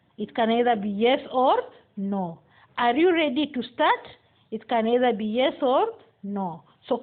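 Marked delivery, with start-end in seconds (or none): 2.8-4.1 rising tune, pitch climbing up on "start". Explaining general yes-no questions, the speaker gives an example: rising intonation. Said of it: "Rising intonation".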